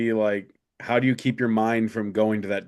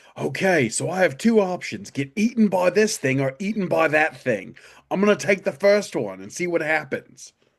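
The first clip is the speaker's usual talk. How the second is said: put-on Australian accent, pitched up higher; 6 semitones higher than usual. Speaker imagining surviving like Bear Grylls, doing a Bear Grylls impression. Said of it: "Not the accent".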